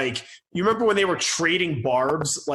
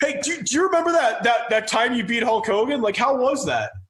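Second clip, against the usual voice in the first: put-on high-pitched voice of a twelve-year-old kid; 8 semitones higher than usual. Mocking an interviewer asking a wrestler a question: imitating Sam Roberts sounding like a twelve-year-old. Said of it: "he sounded like a twelve-year-old".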